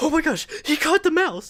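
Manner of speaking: frantic, high-pitched, loud, flipping-out cry. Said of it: "she was flipping out".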